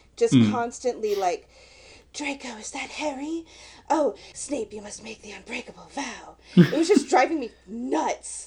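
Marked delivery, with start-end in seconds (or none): 2.2-6.4 soft whisper sustained all the way through. Complaining that an actress whispered constantly in the films, imitating her whispering. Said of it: "she was just whispering all the time".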